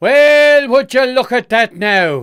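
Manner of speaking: very high, very loud, fake Irish accent. Speaker decides to throw in an irish accent today, doing a bad irish accent. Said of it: "That's a terrible Irish accent".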